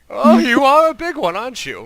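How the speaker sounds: put-on shrill, very high, very loud old woman voice. Telling a story about a woman walking around a table, old woman voice. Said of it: "it's like it's an older female".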